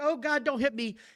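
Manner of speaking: frightened, pleading, crying voice. Retelling a wrestling match, imitating a scared plea. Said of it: "She goes to the ropes like".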